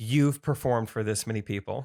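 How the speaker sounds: normal talking voice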